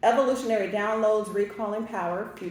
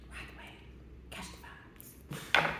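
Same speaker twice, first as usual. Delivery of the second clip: faint, very quiet, breathy whispered phrases. During a card reading, passing on what Spirit said: whispering. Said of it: "I don't know why I'm whispering that".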